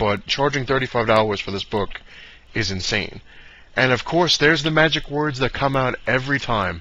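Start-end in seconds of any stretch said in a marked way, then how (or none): none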